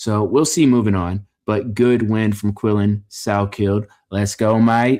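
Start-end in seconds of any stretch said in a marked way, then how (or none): 4.1-5.0 fake, put-on Australian accent. Congratulating a fighter on his win, put-on Australian accent. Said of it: "That was my Australian accent".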